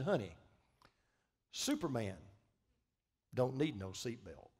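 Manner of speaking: playful, mild, showy boastful tone, acted out. Retelling a passenger's boast to a flight attendant: imitating a loud remark. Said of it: "in a voice loud enough for the entire plane to hear".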